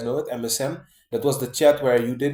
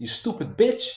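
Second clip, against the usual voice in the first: put-on, very angry, high-pitched outburst; 7 semitones higher than usual. Retelling an insult said alone in frustration at home: retelling an angry insult. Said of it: "I said it like I was very angry".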